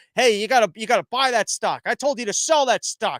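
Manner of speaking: high yelling. Retelling his own speakerphone call about a stock, retelling a yell into the phone. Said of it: "I'm I'm I'm yelling".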